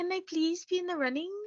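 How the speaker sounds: soft, high, cutesy, eager, excited voice. Retelling how Anne begged to be in the running, imitating Anne's excited, cute voice. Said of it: "everything sounds so like like excited and cute".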